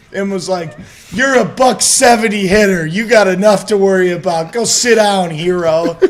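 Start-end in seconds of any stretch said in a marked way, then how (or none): 1.1-5.9 furious, very loud, angry screaming. Telling a baseball story, imitating a man screaming at him. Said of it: "he literally screamed at me".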